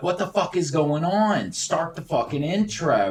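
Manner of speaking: put-on, high-pitched scream. Retelling waiting on stage for the intro, acting out screaming at the other end. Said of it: "I'm I'm screaming at the other end".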